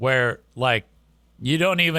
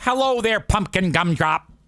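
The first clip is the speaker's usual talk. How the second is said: high, put-on typical Michigan accent; 5 semitones higher than usual. Retelling a greeting heard over the speaker: imitating a typical Michigan accent. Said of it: "She got that typical Michigan accent".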